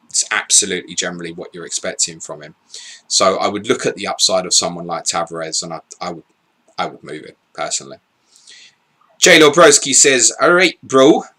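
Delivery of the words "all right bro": put-on Geordie accent, raised and pitched up. Reading out a commenter's message, in an attempted geordie accent. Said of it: "intentional attempt of a Geordie accent there".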